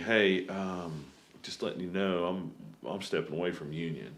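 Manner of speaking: soft, hushed, confiding stage half-whisper. Retelling what the other speaker half-whispered during a radio broadcast: imitating someone half-whispering. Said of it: "you kinda whisper to me".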